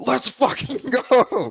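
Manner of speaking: mock ecstatic, excited screaming, very high. Recounting an overtime game-winning goal he watched, retelling his own scream. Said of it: "I'm just screaming".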